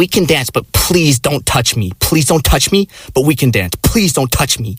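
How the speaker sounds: annoying tone. Retelling what a woman at a bar said: imitating an annoying tone. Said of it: "the most annoying, like, kind of tone".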